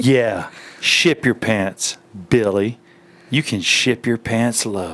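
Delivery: put-on sexy, sultry voice. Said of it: "Do the sexiest voice you've got".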